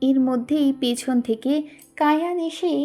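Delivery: ordinary delivery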